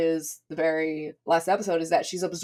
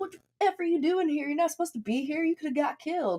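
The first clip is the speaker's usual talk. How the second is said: put-on yell, pitched very high; 10 semitones higher, 3 dB quieter than usual. Retelling a character's angry words from a show: imitating someone yelling. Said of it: "he starts yelling at her".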